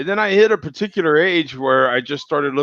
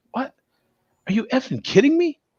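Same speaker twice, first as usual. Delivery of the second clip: mock, very high, exasperated, annoyed disbelief; 10 semitones higher than usual. Retelling what he used to say when he got carded, imitating his own annoyed past self. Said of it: "I used to be kind of annoyed".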